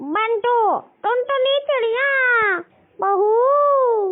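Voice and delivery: shouting. Calling for the family after finding her gold chain missing: shouting. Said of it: "आप इतना चिल्ला क्यों रही हो?".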